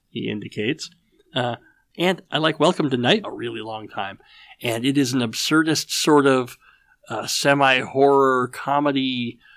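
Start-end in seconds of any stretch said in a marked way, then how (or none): none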